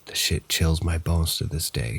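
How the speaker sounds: plain reading voice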